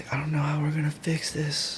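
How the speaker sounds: soft, tearful, helpless crying voice. Retelling what the administration lady said while crying; imitating someone crying. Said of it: "she was crying".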